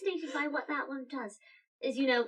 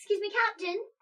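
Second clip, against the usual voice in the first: loud voice, raised and pitched up to carry; 9 semitones higher than usual. A character calls out to the captain, loud. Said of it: "I'll try not to be quite so loud".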